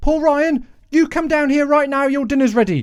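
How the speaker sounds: put-on very high scolding voice with London accent. Describing how his mum calls him by his full name, in a put-on london accent. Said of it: "she doesn't sound like that. She's not from London".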